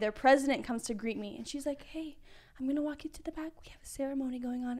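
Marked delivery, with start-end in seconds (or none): 1.8-4.8 calm, serene, very quiet, soft voice. Retelling how a sorority president greeted her: imitating a very quiet voice. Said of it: "It was a very quiet voice".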